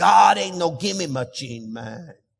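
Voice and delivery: drawn-out put-on Spanish accent, preacher voice.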